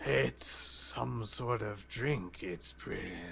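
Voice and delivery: soft, hushed demon character voice. Narrating a game scene to the players, speaking the demon's line, voicing the demon. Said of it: "the demon will say".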